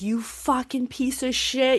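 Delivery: furious, high yelling. Retelling a lost poker hand, acting out yelling at the player who won. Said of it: "yelling at this guy".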